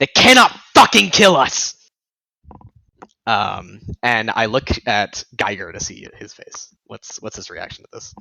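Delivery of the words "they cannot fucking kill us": high, loud, rousing yell. Playing a character answering a leader's cry to the crowd: yelling back. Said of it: "yell back at that".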